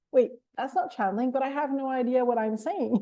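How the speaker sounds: ordinary talk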